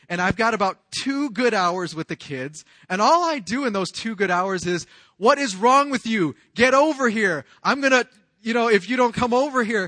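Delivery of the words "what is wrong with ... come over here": loud, high-pitched yelling. Recounting his two hours with the kids after work, retelling yelling at the kids. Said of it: "and I'm just yelling at them".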